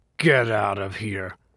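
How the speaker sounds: icy, cold, chilly, unwelcoming voice. Reading a novel, the narrator voices the grite speaking again, in a colder voice. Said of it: "said the grite in a colder voice".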